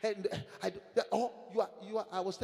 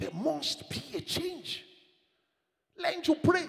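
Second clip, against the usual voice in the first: loud, pitched-up shouting; 7 semitones higher, 5 dB louder than usual. Preaching to the congregation about change, shouting. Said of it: "That's why I'm shouting".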